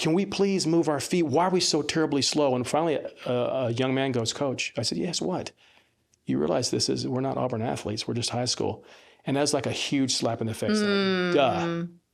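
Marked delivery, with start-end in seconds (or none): 0.0-2.5 mock fed-up, exasperated, frustrated voice. A coach recalls yelling at high school players, retelling yelling at players. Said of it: "I'm yelling".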